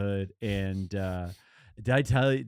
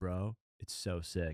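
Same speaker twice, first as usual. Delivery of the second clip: slow, drawling bro talk; 5 semitones lower, 10 dB quieter than usual.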